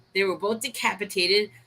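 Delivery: plain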